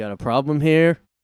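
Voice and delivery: put-on threatening male tone. Retelling what a man said after being looked at, retelling a menacing tone. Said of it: "he said it in a menacing tone".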